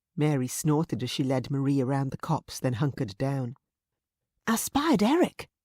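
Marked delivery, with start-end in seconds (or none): 4.5-5.4 wild, urgent whisper, much higher, slower. Reading a story, a character hunkered down by bushes tells her companion in a wild whisper. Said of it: "she whispered wildly".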